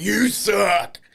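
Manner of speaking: very loud, high put-on wrestler shout. Retelling answering children who told him he sucks: wrestler voice. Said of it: "It's my wrestler voice".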